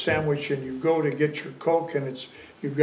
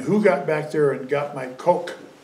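ordinary talk

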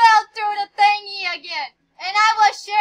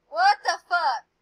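plain, self-assured delivery. Reacting in the middle of a murder game round: blunt, confident cursing. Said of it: "you said that so confident".

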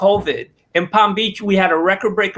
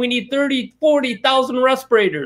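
mock screaming, pitched much higher; 6 semitones higher than usual. Speaker retelling what another man was screaming: retelling a scream. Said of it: "He's screaming".

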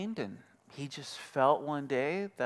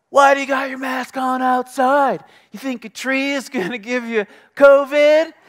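shrieked, shrill yell, very high and very loud; 11 semitones higher, 16 dB louder than usual. Recounting what a lady at an outdoor bar yelled as you walked by, imitating her yell. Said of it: "this lady yells".

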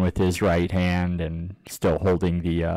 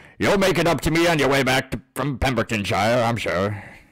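put-on old person voice, higher pitch; 6 semitones higher than usual. In a role-playing game, voicing the innkeeper to a departing player: old innkeeper voice. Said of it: "and there's an old innkeeper here. His name is [name]".

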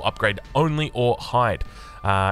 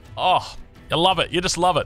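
mocking, ironic, pitched-up sarcastic tone; 7 semitones higher than usual. Reading game update notes aloud to viewers, the speaker is sarcastic. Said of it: "you guys know I'm being sarcastic about that".

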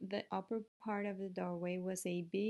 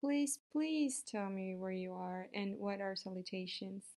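ordinary delivery

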